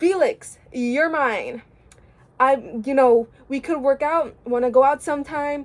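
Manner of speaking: ordinary delivery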